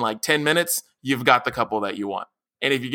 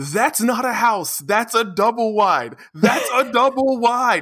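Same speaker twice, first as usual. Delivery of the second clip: mock high, mind-losing screaming; 8 semitones higher than usual. Retelling a House Hunters episode, imitating JB Smoove screaming. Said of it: "whenever he screams".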